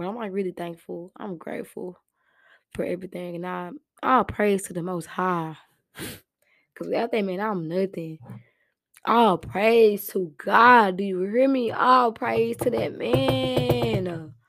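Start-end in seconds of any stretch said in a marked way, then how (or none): 0.0-3.4 soft, rushed voice, fighting not to cry. Speaker reflecting on where they were a year ago, holding back tears. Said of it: "I'm trying not to cry".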